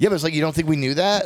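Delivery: combative, argumentative delivery. Retelling a reply to the production manager's reminder: retelling an argumentative reply. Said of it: "I was so argumentative".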